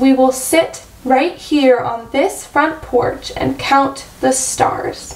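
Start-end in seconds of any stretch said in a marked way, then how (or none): none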